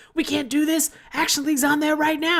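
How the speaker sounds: put-on very high, shrill shrieking scream. Retelling how the chief on the boat reacts: imitating the chief screaming. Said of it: "he's just screaming, screaming and yelling".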